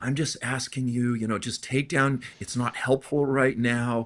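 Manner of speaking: imitated humble voice. Retelling someone asking the speaker to take posts down: imitating a humble tone. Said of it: "he kinda does it in this real humble way".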